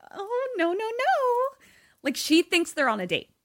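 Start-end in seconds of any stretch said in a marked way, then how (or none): 0.1-1.5 very high, very slow, bashful and coy voice. Retelling a dinner scene where she is poured wine: imitating a coy reply. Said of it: "really coy".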